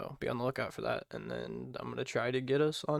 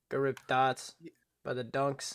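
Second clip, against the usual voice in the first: exaggerated, put-on mock Boston accent. On air, arguing about accents, a speaker shows a mock boston accent. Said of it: "it's a Boston one right there for you".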